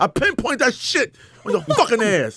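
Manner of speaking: jabbing, punchy, pinpointed emphasis with highs and lows. Showing how comedic delivery works, hitting hard on the curse words: pinpointed emphatic delivery. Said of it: "See that?".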